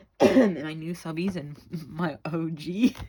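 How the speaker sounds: laughing through the words. Thanking viewers and subscribers at the end of a video, laughing while talking. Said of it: "I'm sorry I'm laughing".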